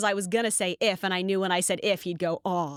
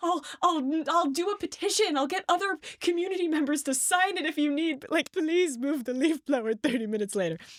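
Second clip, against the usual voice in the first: mock tearful, crying, pleading voice; 8 semitones higher than usual. Retelling what she said to someone, the speaker reenacts her own crying. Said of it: "So I cried".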